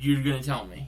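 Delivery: plain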